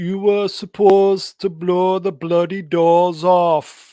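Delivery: very loud, slow, booming, drawn-out put-on Jamaican accent. Reading out a viewer's comment when asked: put-on Jamaican accent. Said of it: "Give us some of your Jamaican accent on this one".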